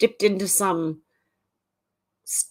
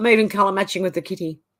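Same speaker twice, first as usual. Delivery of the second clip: ordinary delivery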